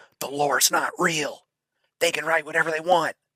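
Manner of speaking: whisper. Saying the quiet part out loud about the lore: whispering. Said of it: "I'm gonna whisper".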